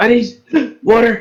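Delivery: high, gasping dwarf character voice.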